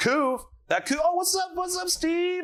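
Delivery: very high, shouted cartoon pigeon voice.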